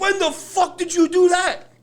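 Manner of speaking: high, slow, excited yell.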